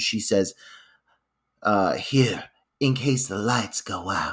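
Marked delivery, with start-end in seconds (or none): 1.9-4.3 mock-ominous tone, lower and quieter. Retelling what a woman says to him, imitating an ominous tone. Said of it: "with this very ominous tone".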